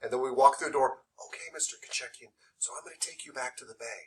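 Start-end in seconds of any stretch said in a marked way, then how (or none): 1.3-4.0 very quiet, hushed, lowered voice. Demonstrating walking someone back to the bay, in a lowered quiet voice. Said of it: "me lowering my voice like that".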